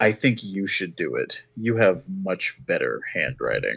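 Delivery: subtly menacing, low-key, understated. A player's character leans over to intimidate someone without drawing the guards, low-key menacing. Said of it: "minorly menacingly, but in like a low key way".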